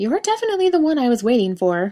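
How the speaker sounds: suspicious, probing tone, high and swooping. The crone looks up from a note and speaks to Jensen, suspicious. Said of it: "she said suspiciously".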